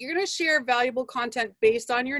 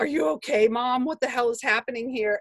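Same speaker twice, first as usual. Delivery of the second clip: put-on dog voice. Voicing the dog while laughing in the Jeep: voicing the dog. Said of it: "The dog's looking at me like".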